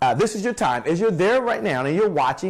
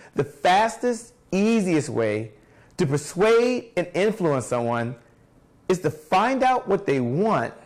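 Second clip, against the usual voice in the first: slowed-down, deliberate delivery, each word given its own space. Repeating a key idea to listeners, said a little slower. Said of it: "I'm going to say that a little slower".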